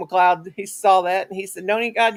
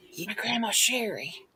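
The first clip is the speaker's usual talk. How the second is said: very soft, hushed half-whisper; 10 dB quieter than usual. Speaker retells the half-whispered answer to their question about a Karen, retelling a half-whisper. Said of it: "he whispers".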